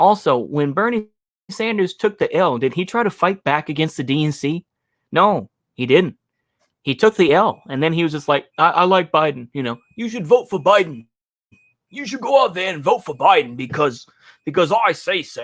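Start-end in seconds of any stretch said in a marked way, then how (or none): 8.6-15.4 put-on voice gradually sliding into a British accent. Mocking a politician urging people to vote for Biden: Bernie Sanders impression slipping British. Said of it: "that kinda went British there".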